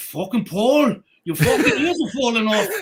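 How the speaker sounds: Irish brogue on every word, loud, swooping. Retelling what he said to Paul out in the nasty wind, imitating Jerry Kennelly's Irish brogue. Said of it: "the Irish brogue".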